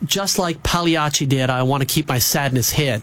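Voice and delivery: ordinary talk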